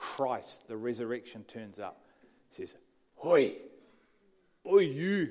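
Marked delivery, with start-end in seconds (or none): 3.2-5.3 put-on Scottish Glasgow accent, called out. The speaker retells Christ calling out to Paul, voicing Christ in a Scottish accent. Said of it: "A Scottish accent".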